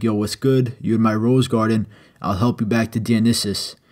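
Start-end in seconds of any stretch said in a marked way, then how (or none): none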